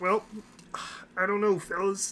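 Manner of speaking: mocking, high, laughing put-on impression voice.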